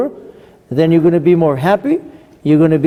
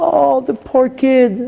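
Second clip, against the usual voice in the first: put-on, high, drawn-out, tearful weeping voice; 8 semitones higher than usual. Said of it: "My wife starts crying".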